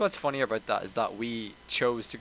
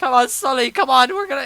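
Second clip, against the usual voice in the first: slight put-on American accent; 11 dB louder than usual. Retelling a tense movie scene underground: Tom Holland's little American accent. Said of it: "Tom Holland in his little American accent".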